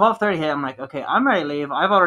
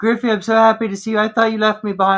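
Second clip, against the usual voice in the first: high, loud voice on the verge of tears; 7 semitones higher, 5 dB louder than usual. Retelling a friend's words at a reunion in a bar: imitating someone near tears. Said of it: "he had tears in his eyes".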